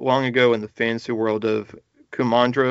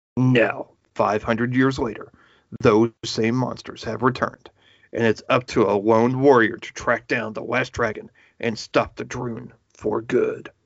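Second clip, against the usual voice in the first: dramatic, intense movie trailer announcer narration. Describing the plot of a family-movie-night film: intense theater voice. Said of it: "my intense theater voice".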